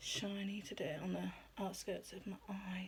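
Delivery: slow, soft, hushed whisper.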